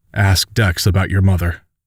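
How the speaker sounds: usual speaking voice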